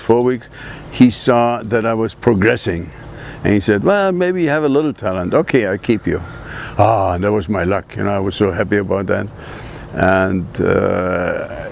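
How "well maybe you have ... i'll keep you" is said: normal talking voice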